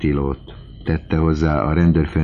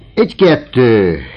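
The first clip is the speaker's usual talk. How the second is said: fencing-master shout, higher and louder; 8 semitones higher, 9 dB louder than usual. Saying farewell to Özsen, a man drops into a fencing stance: shouted like a fencing master. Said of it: "vívómesteri hangon kiáltotta".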